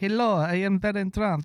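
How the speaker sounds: put-on high, vampire-like Slovenian accent. Describing a childhood video, imitating Barron Trump in a Dracula-like accent. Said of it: "he spoke like a little like Dracula because his mom has got that Slovenian accent".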